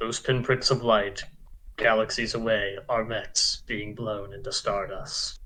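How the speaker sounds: grand, low, hushed anime narrator voice. Waiting while another player finishes a turn, in Gundam narrator voice. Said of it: "Gundam narrator voice".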